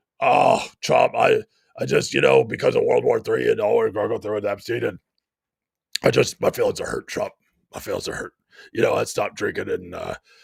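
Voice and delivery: rough, creaky put-on voice, pushed out. Doing an impression lamenting that Trump no longer wants him: Alex Jones voice. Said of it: "Trying to do the Alex Jones voice".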